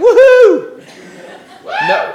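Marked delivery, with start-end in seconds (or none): 0.0-0.8 high-pitched, loud, gleeful whoop. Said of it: "They're like".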